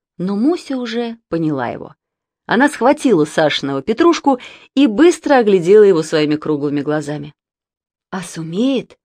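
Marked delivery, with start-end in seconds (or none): 8.1-8.9 quieter whispering voice. Musya asks Sasha, holding Sasha's Petrushka puppet; whispered question. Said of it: "Шепотом спросила она".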